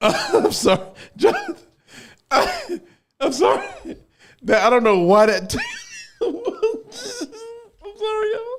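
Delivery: very high voice with giggles breaking through. Apologizing to viewers while holding back laughter. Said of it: "I'm trying not to laugh".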